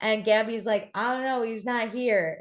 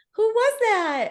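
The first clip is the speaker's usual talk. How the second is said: put-on very high-pitched, loud, girly squeal; 11 semitones higher, 5 dB louder than usual. Retelling what Lindsay asked, imitating Lindsay's high-pitched voice. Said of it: "Lindsay in her high pitched voice".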